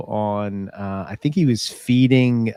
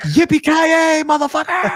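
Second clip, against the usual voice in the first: mock excited scream, much higher pitched; 3 dB louder than usual. Recounting a speeding driver, the speaker retells an excited scream out the window. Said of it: "Screaming out the window".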